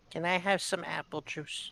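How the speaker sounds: put-on soft, sad child voice. Voicing a kid at a bar who looks sad: sad kid voice. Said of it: "he's just kinda sad".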